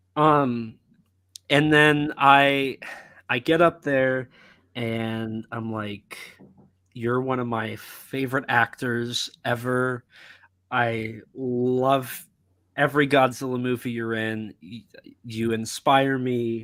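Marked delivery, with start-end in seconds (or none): none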